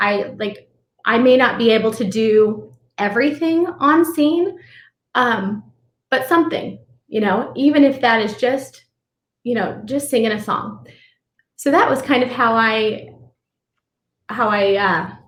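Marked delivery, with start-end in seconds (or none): 11.6-15.1 slightly choked up, faltering, halting delivery. Speaker explains how they came to their decision, a little choked up. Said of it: "sorry, a little choked up".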